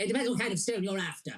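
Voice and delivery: plain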